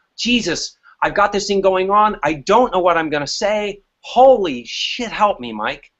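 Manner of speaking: plain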